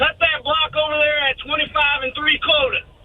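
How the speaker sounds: rural country accent. Retelling how guys talked at work, giving an order: country accent. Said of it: "when you say it in a country accent".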